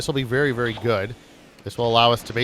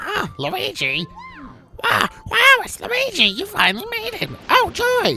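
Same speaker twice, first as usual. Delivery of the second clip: horrible very high character voice, slow and swooping; 3 dB louder than usual. Reading a game character's lines aloud: horrible Toad voice. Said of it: "so sorry for that t-, horrible Toad voice".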